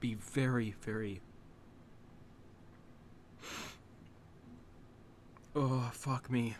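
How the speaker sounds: slow, emotional whisper, overcome with emotion. Reviewer reacting to a character being killed off in a show: getting very emotional. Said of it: "I'm getting very emotional".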